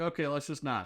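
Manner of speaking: plain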